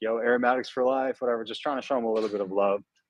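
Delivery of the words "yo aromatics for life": easy, friendly called-out voice. Retelling shouting out to someone seen in line: retelling a shout. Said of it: "I just shouted out".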